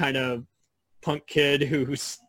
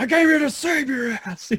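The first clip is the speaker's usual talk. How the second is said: play-acted bellowing outburst, pitched very high; 12 semitones higher than usual. Discussing a favorite Jack, the speaker quotes his line, retelling a bellow. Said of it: "he also bellows".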